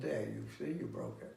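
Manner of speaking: stoic emotionless tone. Retelling an anecdote about a master twisting a leg: imitating a stoic emotionless delivery. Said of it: "and he stoically, without emotion, said".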